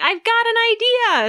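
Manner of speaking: yelling, very high pitched and eager.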